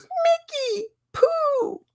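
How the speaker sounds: put-on tiny, cute toddler voice piping up, very high. Retelling what a one and a half year old said on seeing this: imitating a toddler's cute voice. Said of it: "when she goes".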